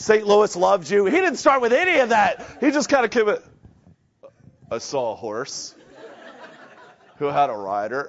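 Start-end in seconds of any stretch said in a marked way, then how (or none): 4.7-8.1 put-on southern California accent, much lower, quieter, slower. Quoting a man's opening line to an audience, in a Southern California accent. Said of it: "you got to read that with like a California Southern Cal accent".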